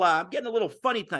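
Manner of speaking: talking extra fast, rattled off. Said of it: "I'm talking a little bit extra fast".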